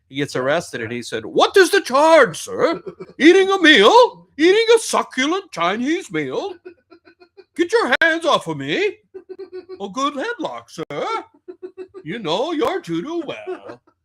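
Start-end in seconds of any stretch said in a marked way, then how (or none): 1.2-13.7 put-on very high, loud posh British accent. Retelling what a man arrested in Australia said to the officers, British accent. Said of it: "it sounded like a British accent to me".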